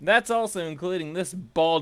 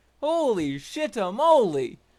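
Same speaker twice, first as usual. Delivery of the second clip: put-on Italian accent, pitched up; 5 semitones higher than usual. Reacting to a video, joking in a put-on Italian accent. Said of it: "why am I speaking Italian".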